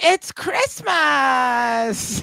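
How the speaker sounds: very high, rasping, creaky Christmas with long drawn a. Imitating how the character would say a line: Linda Belcher voice. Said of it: "she'd be like".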